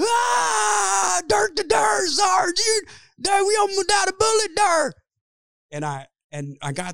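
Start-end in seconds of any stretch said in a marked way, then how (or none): 0.0-4.9 acted, very high, shrill, drawn-out screaming. Retelling an audition where the director demanded screaming: imitating own audition scream. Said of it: "tried to scream for thirty straight seconds".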